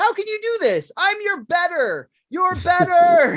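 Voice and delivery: very high, upset, swooping screaming outburst. Recalling the scene where the crowd leaves, the speaker does Homer Simpson screaming. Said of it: "He's like screaming at him like".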